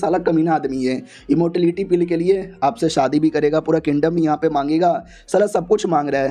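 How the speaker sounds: ordinary talk, nothing marked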